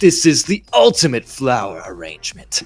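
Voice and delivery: animated character voice with wide, swooping pitch. Retelling a Shadow line from a side mission: Shadow voice. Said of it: "he's like".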